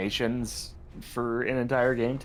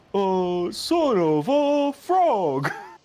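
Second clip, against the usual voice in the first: very slow, high, loud, drawn-out cartoon voice; 8 semitones higher, 5 dB louder than usual. Joking about an anger translator version of a character: Big the Cat voice. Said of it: "but in the Big the Cat voice".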